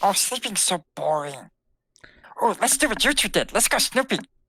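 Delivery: mischievous little creature voice. In a role-play game, the puka answers a suggestion to go back to sleep; Puka character voice. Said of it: "Is this the same puka?".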